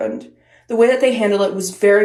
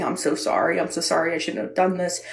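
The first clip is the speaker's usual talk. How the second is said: mock tearful bawling and sobbing, repeated; 3 semitones lower, 7 dB quieter than usual. Retelling a classmate's apology at his desk: imitating someone bawling. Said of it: "he was bawling his eyes out".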